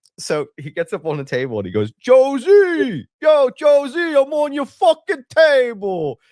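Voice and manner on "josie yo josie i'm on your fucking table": put-on Philly accent, very high, very loud, slow. Retelling a cousin standing on the deli table: put-on philly accent. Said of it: "that's my go-to Philly thing".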